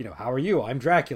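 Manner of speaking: flat, matter-of-fact delivery. Describing a film's Dracula greeting a guest, mimicking his delivery: flat Dracula line. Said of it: "he just sort of delivers this very flat".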